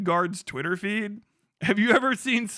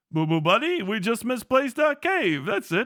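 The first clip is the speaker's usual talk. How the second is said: classic swooping cartoon bear character voice; 2 semitones higher than usual. Repeating a line to Boo Boo after saying you can do the voice, in a Yogi Bear voice. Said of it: "I know I can do the voice".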